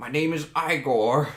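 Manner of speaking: put-on hunchback voice. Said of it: "I'm changing my voice every time".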